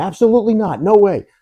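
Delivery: very high, shrill screaming. Retelling how he reacted to someone approaching: imitating someone screaming. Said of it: "he starts sh-, screaming".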